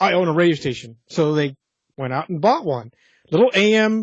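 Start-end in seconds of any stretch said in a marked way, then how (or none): none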